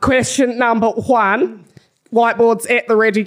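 put-on Australian accent. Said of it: "Can you do this whole round in Australian".

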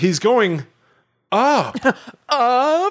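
dramatic, stagey delivery, pitched very high. Retelling what a guy said about where someone is going, theatrical delivery. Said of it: "like theatrically".

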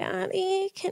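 put-on tiny, very high, soft childish baby voice. Retelling talking to daddy while half asleep, speaking in baby voice. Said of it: "it was like in baby voice too".

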